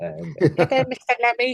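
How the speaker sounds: put-on tiny, very high little kid voice. Recalling being about four and greeting a man, in a little voice. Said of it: "in my little sort of little voice".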